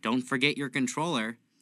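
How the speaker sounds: nonchalant, offhand, dripping with sarcasm. Retelling a friend's line while gaming: imitating a heavily sarcastic nonchalant remark. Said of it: "he nonchalantly, and that's heavily sarcastic".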